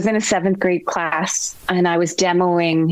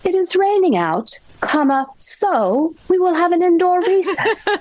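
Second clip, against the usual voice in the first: terrible put-on English accent, pitched way up; 12 semitones higher than usual. Speaker retelling a third grade student's compound sentence, in an English accent. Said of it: "in his English accent".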